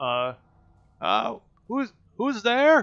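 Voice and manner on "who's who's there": put-on fairly old voice, high, raised, crying out. A light flickers on in a window and a voice cries out, old voice crying out. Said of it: "and it sounds fairly old".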